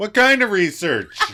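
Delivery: sudden, loud, high, shrill blurt. Recounting a story, quoting one man's reaction, loudly. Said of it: "loudly just goes".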